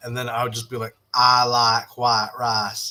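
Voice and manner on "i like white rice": put-on Southern accent, slow and drawled. Retelling how a classmate taught a southern drawl: retelling own southern accent attempt. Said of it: "but with a Southern accent".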